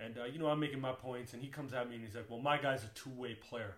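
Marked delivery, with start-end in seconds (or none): 2.3-3.8 mock-proud boastful tone, slower. Retelling a basketball debate, quoting the friend's comeback, imitating a proud friend. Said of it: "And he says this so proudly".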